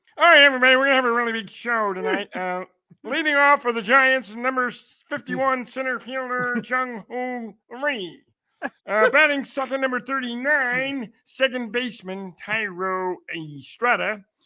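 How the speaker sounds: froggy puppet character voice. Announcing a baseball lineup, doing a Kermit the Frog voice. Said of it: "I might as well do my Kermit the Frog voice".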